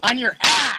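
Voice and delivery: shrieking, shrill shout, pitched very high. Announcing that last place is closing the gap in the ranking: yelling. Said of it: "Sorry for the yelling".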